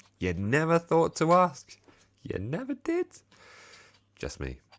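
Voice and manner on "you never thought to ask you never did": very high-pitched, slow mocking voice. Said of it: "I was like".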